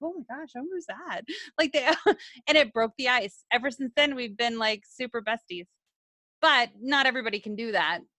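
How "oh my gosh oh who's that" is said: soft, hushed gossiping voice. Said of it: "everybody's, like, whispering".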